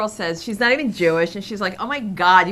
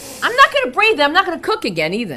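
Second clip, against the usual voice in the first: genuinely upset, loud, swooping outburst; 7 semitones higher, 5 dB louder than usual. Told to calm down and breathe, the speaker refuses; upset. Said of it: "I'm upset".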